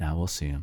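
muttering under the breath. Recalling someone's remark after hearing the whale sharks were gone, retelling a mutter under breath. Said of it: "But under his breath".

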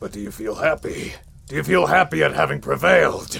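very loud, high, rough barbarian roar. In a role-play game, voicing the champion of the brawling circuit: Corwin the half-orc barbarian voice. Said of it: "Well, today you will be crossing paths with the champion of the Craghammer Brawling Circuit, the Defenestrator, the man whose philosophy is fight, [name] Corwin, the Half-Orc Barbarian".

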